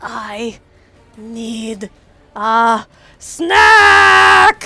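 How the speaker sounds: enraged, very loud, slow, booming, drawn-out roar. Describing a swollen, furious character after a kill, voicing her line: furious. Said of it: "her eyes look furious".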